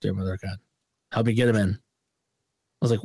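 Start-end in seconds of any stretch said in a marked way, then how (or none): 0.0-1.7 flat, lower put-on deadpan voice. Imitating an actor's line from a film: flat Anthony Hopkins delivery. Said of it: "so flat".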